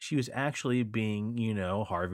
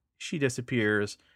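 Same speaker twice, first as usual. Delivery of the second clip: ordinary delivery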